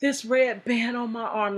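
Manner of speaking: play-acted, choked-up, tearful, weeping voice. Retelling a phone call from someone in jail: imitating someone crying. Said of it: "like he's crying".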